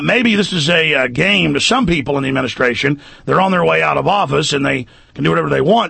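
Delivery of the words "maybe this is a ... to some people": plain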